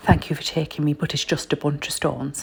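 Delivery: put-on speaking with an Irish accent. Retelling what she said after being taken to Stonehenge, Irish accent. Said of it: "In her Irish accent".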